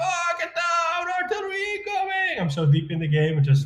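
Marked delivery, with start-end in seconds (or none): 0.0-2.4 mock shrill, very high screaming yell. Retelling what they yell during game artillery barrages: imitating own screaming. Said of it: "I start screaming".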